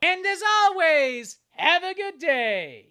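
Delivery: strained, high-pitched, loud, slow and stretched-out voice. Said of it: "Oh, my fucking voice".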